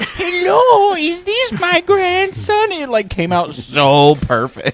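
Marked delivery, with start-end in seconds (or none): 0.0-2.7 put-on very high old woman voice, hello drawn out. Retelling a recorded commercial part, imitating an old woman. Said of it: "When I was trying to be the old woman".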